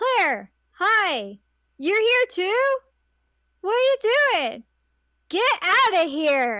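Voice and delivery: clunky, hammy, loud, slow, swooping, pitched way up. Retelling a game scene with bad delivery: Leon's bad voice acting. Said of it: "sometimes delivery is bad".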